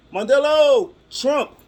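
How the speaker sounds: very high-pitched, loud yelling. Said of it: "he starts yelling".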